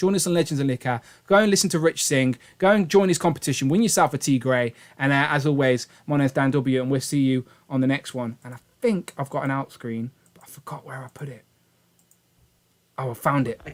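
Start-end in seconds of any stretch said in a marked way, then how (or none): 10.3-11.4 quiet whispered voice. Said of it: "I don't know why I whisper at this point".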